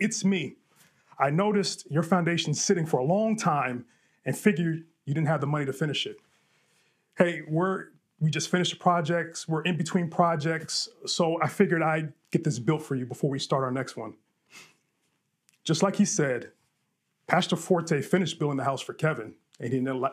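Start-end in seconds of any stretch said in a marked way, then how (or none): none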